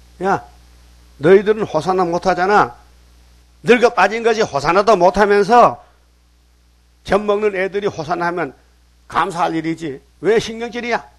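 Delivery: indignant, high, loud scolding tone.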